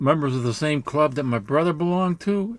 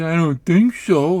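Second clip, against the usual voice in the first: loud, sarcastic, mocking copycat echo, acted out; 5 dB louder than usual. Retelling a reply that mocked a stranger's way of talking: imitating a mocking reply. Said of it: "I was mocking him because he was talking like that".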